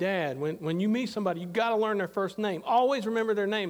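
ordinary delivery

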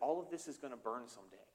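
put-on whisper under the breath. Retelling what a companion said in the gardens: imitating a whisper under the breath. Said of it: "kind of whispered it under his breath".

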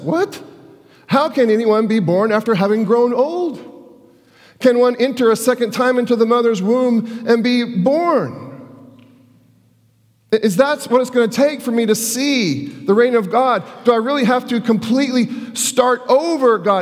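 high, pleading, anguish-filled voice. Reading Nicodemus's reply to Jesus aloud: put-on anguish. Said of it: "you can also hear the anguish in his voice".

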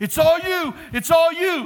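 loud, shrill, high, drawn-out yell. Retelling a workout, imitating a spotter yelling encouragement. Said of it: "then would start yelling".

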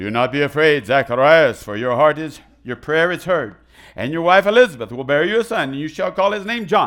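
very loud, booming, heavenly herald-style angel voice. Reading verse 13 aloud, voicing the angel speaking to Zacharias: Gabriel angel voice. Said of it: "I'm gonna do my angel voice".

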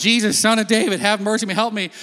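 loud yelling, crying out over and over. Speaker retelling a Gospel story, acting out a man yelling to Jesus. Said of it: "So he keeps yelling".

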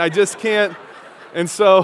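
ordinary talk

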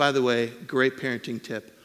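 ordinary delivery

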